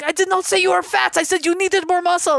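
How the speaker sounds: very high-pitched French guy voice. Retelling what a French ex said after calling her fat: imitating a French guy. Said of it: "I dated a French guy".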